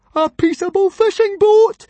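very loud, very high overjoyed cry. Narrator reading Fishlegs on hearing far-off dragons, in a joyful voice. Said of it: "said Fishlegs joyfully".

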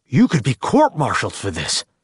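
plain reading voice

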